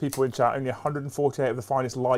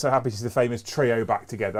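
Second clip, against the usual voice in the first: ordinary talk, nothing marked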